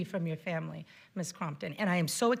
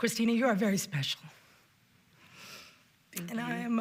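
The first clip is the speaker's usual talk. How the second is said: deeply moved, overcome voice, struggling to continue. Addressing someone after hearing about their trauma, overcome with emotion. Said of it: "excuse me for a moment".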